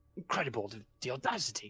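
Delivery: put-on indignant grumble. Describing a play starting, acting out an audience member: mimicking an indignant grumble. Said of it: "you hear some people grumbling".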